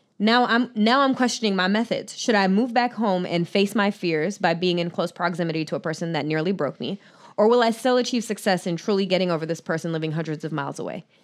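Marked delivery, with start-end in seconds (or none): none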